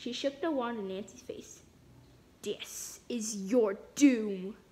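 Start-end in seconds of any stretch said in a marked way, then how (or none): 2.4-4.5 low, deep, slow, deliberate doom voice. Narrating a girl shaking a wand in Nancy's face, speaking in a deep voice. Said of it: "she said in a deep voice".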